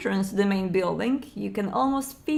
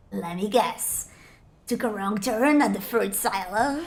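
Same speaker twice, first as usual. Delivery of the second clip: hoarse, raspy stage whisper, very close and intimate. In the story, a stranger with a gun speaks into the listener's ear in a raspy whisper. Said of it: "A raspy voice whispers in your ear".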